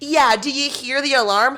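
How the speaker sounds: put-on patronizing, condescending, isn't-it-obvious tone. Retelling what a man said while the building alarm was going off, mock-condescending voice. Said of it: "condescending voice".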